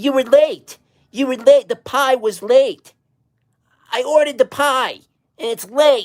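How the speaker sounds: very high, shrill, nagging whiny voice. Mocking a whiny little guy's repeated complaints; imitating his whining.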